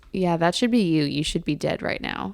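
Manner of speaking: utterly serious deadpan tone, no hint of joking. Retelling what a classmate said in class; retelling a deadpan remark. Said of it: "completely serious, deadpan".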